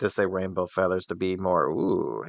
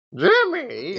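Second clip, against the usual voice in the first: very high, squeaky put-on voice. Calling out a name after saying they're doing the voice: Missus Foster's voice. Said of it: "doing the Missus Foster's voice already".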